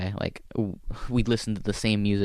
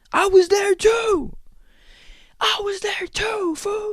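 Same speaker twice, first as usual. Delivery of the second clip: put-on very high, shrill drunken hollering, slow; 5 dB louder than usual. Retelling a heckler who keeps interrupting the set, imitating a drunk heckler. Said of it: "just drunk Marine shit".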